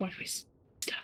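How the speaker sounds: slow, quiet whisper. Player's character walks up to the others and asks them, whispering. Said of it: "I'll whisper".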